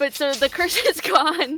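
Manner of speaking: laughing while talking. Recapping a game session while laughing at the memory: laughing while talking. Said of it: "I just can't laughing at that".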